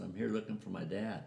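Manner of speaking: ordinary talk, nothing marked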